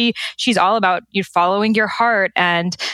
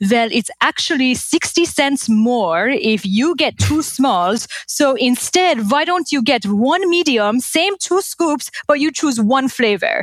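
put-on thick-voiced Persian accent, pitched up; 5 semitones higher than usual. Retelling an ice cream outing, quoting dad in his Persian accent. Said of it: "in his Persian accent".

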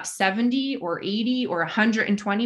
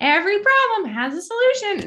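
put-on very high, sing-song kids' cartoon lilt; 12 semitones higher, 5 dB louder than usual. Quoting a character's line heard over and over, in lilting Leapfrog character voice. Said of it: "It's in that exact like lilting voice too".

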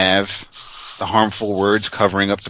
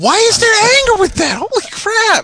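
very high cartoon puppet voice; 6 dB louder than usual. Reacting after someone reads aloud: Muppet-like voice. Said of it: "You sounded like a Muppet".

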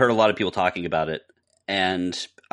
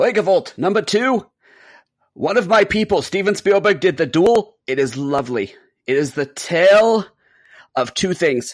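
put-on very high, loud old-man voice; 11 semitones higher, 5 dB louder than usual.

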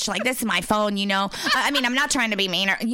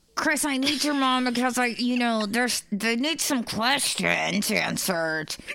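slow talk through a clenched jaw, teeth gritted; 3 semitones higher than usual. Retelling a phone call from an uncle: imitating Uncle Jimmy talking through clenched jaw. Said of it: "Stop going into that voice".

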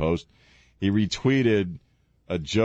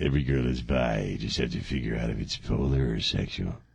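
very low, sinister, creepy voice; 9 semitones lower, 4 dB quieter than usual. Joking around, delivering a line in a creepy voice. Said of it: "I just said it in my creepy voice".

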